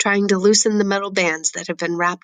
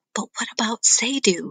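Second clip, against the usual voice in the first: loud theatrical whisper; 4 semitones higher than usual. Narrator reading a story where she asks the narrator a question: whisper. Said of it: "She asks in a whisper".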